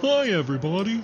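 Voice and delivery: very high felt-puppet voice. Asked by the host to say hi to listeners: Muppet voice. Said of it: "It's called a Muppet voice".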